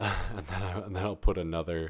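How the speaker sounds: talking through laughter. Setting up a Blender scene and adding another monkey, laughing while talking. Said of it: "I'm laughing, it's not that funny".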